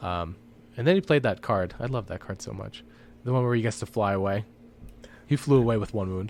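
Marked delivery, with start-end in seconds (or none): 1.8-2.8 heavy, dry sarcasm. Recounting an opponent's card from a tabletop match: sarcastic. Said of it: "absolutely no sarcasm in your voice".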